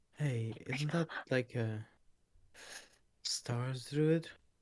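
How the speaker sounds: soft, hushed half-whisper. Playing a character who half-whispers to Dahlia about the Stars Druid: half-whispering. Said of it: "whisper to her".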